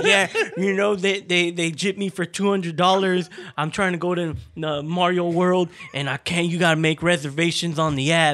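wild ranting voice. Retelling a TikTok video about a theme park: imitating an angry guy. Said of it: "He was all mad".

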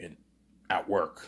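sheepish, embarrassed, hushed whisper. Retelling an embarrassed man's answer to the secretary: imitating a whisper. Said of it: "he whispers".

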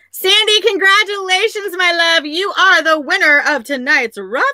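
high-pitched squeal. Announcing the winner of tonight's raffle to the crowd, screaming. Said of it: "Sorry for screaming".

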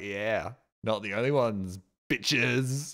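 self-satisfied, gloating cartoon dinosaur voice. Voicing a drawn dinosaur in the bottom corner: smug dinosaur voice. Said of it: "Being all smug and shit, being like".

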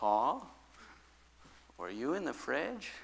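very soft, sweet, motherly hushed voice. Retelling how mom came into the room and asked a question: imitating mom's soft sweet voice. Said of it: "she says with a nice, soft, sweet voice".

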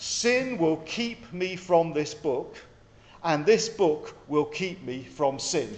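very slow, drawn out, deliberate, words spaced apart. Repeating a phrase they like, the speaker says it again slowly. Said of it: "I'll say it again slowly".

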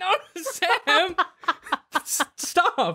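panicked, high-pitched voice. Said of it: "and you're like".

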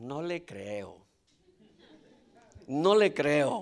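very low, very quiet, sing-song mocking sarcasm. Preaching to a church member who chases other churches' services: sarcastic. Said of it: "con sarcasmo".

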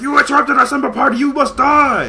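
menacing voice, pitched high and loud.

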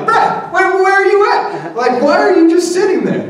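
shrill, acted-out exasperation. Retelling Martha finding Mary sitting at Jesus' feet: acting out Martha upset. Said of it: "She's getting all upset".

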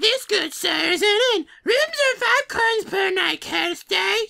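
put-on very high, little girl toad creature voice. Reading an innkeeper's dialogue aloud in a girl toad voice. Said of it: "You trying to make a girl toad voice?".

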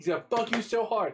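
put-on, full-on, high-pitched shout. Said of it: "Sarah Silverman is yelling at the".

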